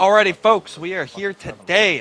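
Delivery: very loud, high, excited host-style delivery. Speaker opening a racing video to folks, with an excited voice. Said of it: "I have an excited voice on".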